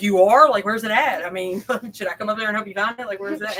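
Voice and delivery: mock frantic rushed voice. Retelling a reply to a caller who is missing something: retelling own panicked reply. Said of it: "I'm panicking 'cause I'm like".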